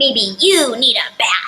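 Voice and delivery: slow loud angry voice. Reading a storybook character's line aloud in an angry Pigeon voice. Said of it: "in an angry voice so I sound just like him".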